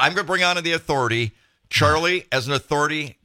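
ordinary talk

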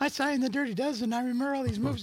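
high, fast, gushing, starstruck fan voice.

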